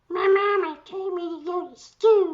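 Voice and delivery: put-on squeaky voice, very high and loud. Recalling a British guy who called up schools: imitating his voice. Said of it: "what was his voice? He did something like".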